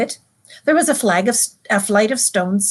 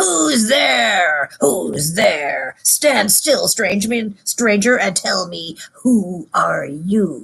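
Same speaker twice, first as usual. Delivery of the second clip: beastlike, growling wolf voice through the words. Narrating a story, the huge creature challenges a stranger: growling voice. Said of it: "said in a growling voice".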